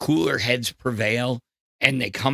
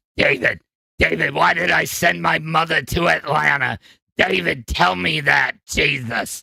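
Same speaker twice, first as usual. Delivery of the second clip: scratchy, put-on movie-dad character voice; 3 semitones higher, 4 dB louder than usual. Comparing a scratchy voice to a film actor: imitating the guy from Independence Day. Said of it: "I sound like the guy from Independence Day".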